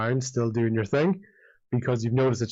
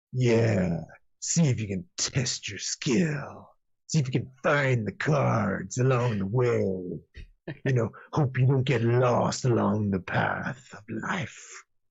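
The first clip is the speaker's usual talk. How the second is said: really overdone, over-the-top performer voice. Imitating how a man talks once he gets performative: exaggerated performative voice. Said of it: "a really sort of exaggerated performative voice".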